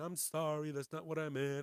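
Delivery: mock weepy, tearful, sobbing voice. Retelling an apology video, imitating Wendy Williams crying. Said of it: "starts crying and saying".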